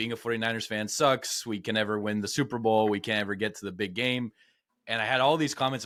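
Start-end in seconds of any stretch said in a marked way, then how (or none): none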